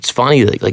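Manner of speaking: ordinary talk, nothing marked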